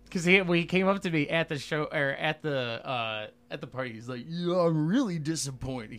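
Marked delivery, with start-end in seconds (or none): 4.3-6.0 put-on higher-pitched surfer-dude voice. Retelling what a guy said to him at the party, imitating Zach's surfer talk. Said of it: "He talks like a surfer".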